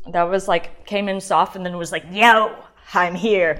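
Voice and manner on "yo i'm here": loud, choppy, sinister-sounding evil voice. Tasting a wine and voicing it, choppy, evil-sounding voice. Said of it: "my voice to sound like that choppy when I said yo, that sounded evil".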